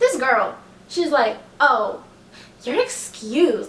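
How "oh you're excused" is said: mock tone dripping with sass. Retelling what a girl trying to board the bus said, mimicking a sassy tone. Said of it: "like in the most sassy tone ever".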